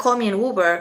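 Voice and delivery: normal talking voice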